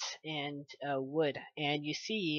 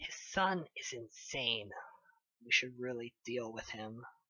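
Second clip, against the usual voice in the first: low, secretive half-whisper under the breath; 4 semitones lower, 11 dB quieter than usual. Voicing a character who speaks under his breath to the listeners, half-whispering. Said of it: "like whispering to you".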